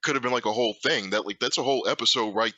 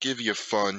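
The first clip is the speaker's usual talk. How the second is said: menacing, threatening tone. Conceding a point in a Power Rangers discussion, menacing. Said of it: "that sound like a threat?".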